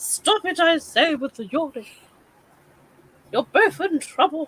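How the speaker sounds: very posh put-on voice. During a live, the speaker repeats the previous line in a really posh voice. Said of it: "I had to say that with a really posh voice".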